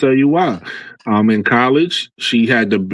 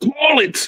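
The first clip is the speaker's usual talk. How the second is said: terse, curt tone, very high pitch. Imitating a player staring down the ref: imitating a player demanding a call. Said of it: "look at the ref like".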